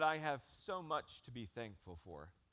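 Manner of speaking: mimicked frail, broken voice. Quoting a 94-year-old woman who loves Jesus, imitating a weak, broken voice. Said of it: "with her weak and broken voice".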